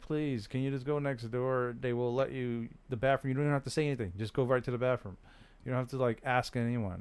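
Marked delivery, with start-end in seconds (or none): none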